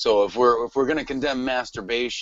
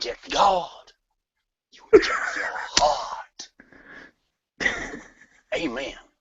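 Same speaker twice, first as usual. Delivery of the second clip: put-on Southern preacher delivery; 6 semitones higher than usual. Speaker giving a spiel about God, in a Southern Baptist preacher voice. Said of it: "in my best Southern Baptist voice".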